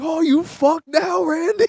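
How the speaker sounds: put-on shrill, full-volume child's scream, very high. Recalling being nine years old, retelling screaming at the TV. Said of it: "I remember screaming at the TV".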